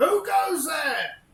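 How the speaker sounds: very high, very loud, booming, shrill yell. Voicing a figure with a shovel in a foggy graveyard: yelling graveyard figure. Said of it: "and he yells".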